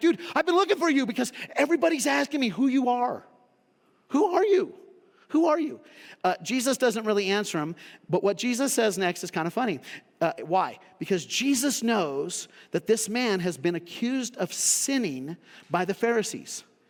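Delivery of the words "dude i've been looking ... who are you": put-on astonished, insistent, surprised, pitched-up voice. Retelling how a healed man questions someone: imitating a surprised man. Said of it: "and he's surprised".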